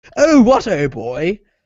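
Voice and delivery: over-the-top British accent, high and loud. Describing American movies' British accents, giving an example: over-the-top British accent. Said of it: "an over-the-top British accent".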